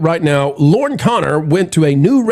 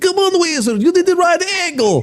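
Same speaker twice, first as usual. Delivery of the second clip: put-on Russian accent, much higher pitch; 13 semitones higher than usual. Retelling a stop at Dollywood's Wild Eagle ride with friends, the speaker uses a put-on Russian accent. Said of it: "we put on Russian accents".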